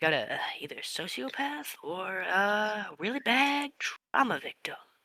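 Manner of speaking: soft mutter under the breath, to himself. Voicing a character's aside about a player's drink order: muttering under his breath. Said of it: "under his breath".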